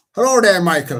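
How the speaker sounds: unplanned Irish accent. Greeting michael, slipping into an irish accent without meaning to. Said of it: "I didn't mean to put an Irish accent".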